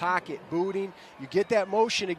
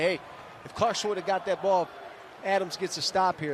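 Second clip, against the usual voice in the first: ordinary delivery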